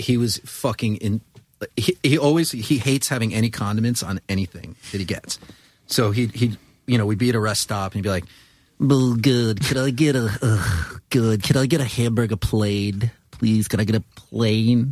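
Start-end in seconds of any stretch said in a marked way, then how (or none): 8.8-14.9 put-on Queens New York accent. Retelling how Adam ordered food at a rest stop, imitating Adam's Queens accent. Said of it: "With his Queens accent".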